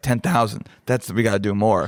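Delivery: normal talking voice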